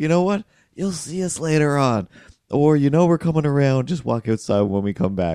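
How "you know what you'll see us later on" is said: put-on yell, much higher pitch. Retelling how the lady across the street yelled from her kitchen window, imitating her yelling. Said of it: "opened her kitchen window and yelled".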